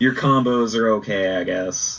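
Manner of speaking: monotone, flat, bored, deadpan announcer voice. Pitching a fighting-game joke with a bored announcer, monotone bored announcer. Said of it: "I'm pretty monotone".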